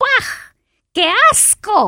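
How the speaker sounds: shrill, rude, very high-pitched outburst. The little man answers the king's kind offer: rude exclamation. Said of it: "exclamó grosero el hombrecillo".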